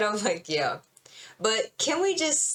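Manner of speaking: ordinary talk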